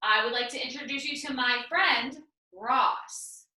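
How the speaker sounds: short pause just before saying a name. Showing the comma when introducing someone, short pause before 'Ross'. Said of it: "There's a little bit of a pause in my, in my voice".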